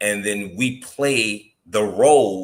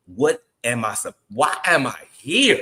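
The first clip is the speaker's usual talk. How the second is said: mock, desperate, loud crying out; 3 semitones higher than usual. Retelling praying on the beach before dawn: retelling crying out to God. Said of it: "just crying out".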